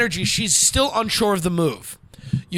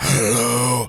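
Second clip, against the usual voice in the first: very deep, low woman's voice; 7 semitones lower than usual. Showing the listener the way to talk instead, in a deep voice. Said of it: "a woman with a deep voice".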